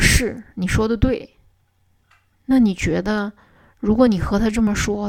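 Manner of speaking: ordinary talk, nothing marked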